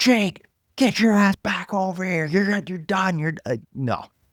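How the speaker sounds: very high-pitched scream. Act out the man calling Jake Ottinger back after the timeout, imitating someone screaming at a player. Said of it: "he's screaming at him".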